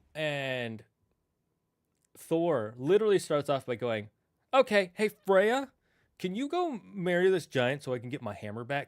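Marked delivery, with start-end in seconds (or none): 4.5-8.8 breezy dude-bro voice with swooping pitch. Retelling the myth, quoting Thor asking Freya to marry a giant, Thor as a dude bro. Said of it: "Thor's kind of a dude bro".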